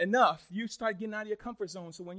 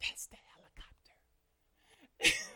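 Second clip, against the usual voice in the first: put-on hushed small child whisper. Retelling a story where a son answers the phone: imitating a child whispering. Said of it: "He's whispering".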